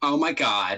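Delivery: deliberately terrible put-on American accent. Quoting people in the comments, in a bad put-on American accent. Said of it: "I'll do my worst American accent".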